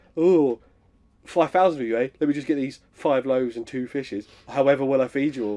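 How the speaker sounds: heavily sarcastic all the way through. Retelling a comedy bit about a figure feeding five thousand: imitating sarcastic Jesus. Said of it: "a really good bit about sarcastic Jesus".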